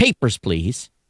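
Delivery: put-on, brusque, curt, bureaucratic official tone. Retelling the lady at the desk asking for papers: imitating a curt demand. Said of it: "kind of in that same tone".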